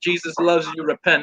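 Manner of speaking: ordinary talk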